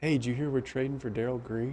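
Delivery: very quiet, secretive half-whisper. Retelling a locker-room prank on a reporter: imitating a half-whisper. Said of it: "whispering in the locker room".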